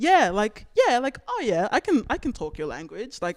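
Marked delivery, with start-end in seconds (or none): 1.3-3.2 put-on, sing-song, pitched-up code-switching voice. Showing how she sounds when code-switching in other spaces: imitating her code-switching voice going up. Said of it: "And it just goes up".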